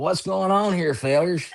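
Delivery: put-on raspy character voice, very high. Showing how a line sounds when read in character: raspy character voice. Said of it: "in that raspy voice that I do".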